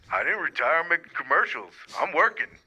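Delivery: deep, low voice. Calling into the program as a caller: Shaquille O'Neal impression. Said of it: "do we have Shaquille O'Neal calling into the program".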